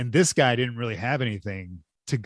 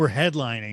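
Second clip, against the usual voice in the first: ordinary delivery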